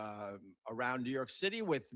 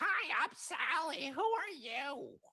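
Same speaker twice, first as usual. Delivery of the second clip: silly, soothing AI voice, very high and very slow. Retelling his reply to his AI assistant, in a silly voice. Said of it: "heard the soothing voice of my A I".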